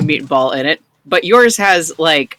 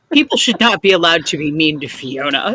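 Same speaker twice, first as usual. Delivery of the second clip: small, stern voice. Game master voices a short character speaking up from thigh level, stern little voice. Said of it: "comes a stern little voice from roughly your thigh level".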